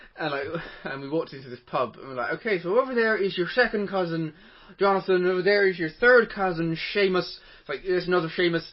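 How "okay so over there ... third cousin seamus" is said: put-on Irish accent. Asked to do the accent while telling a pub story, Irish accent. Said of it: "go to the accent".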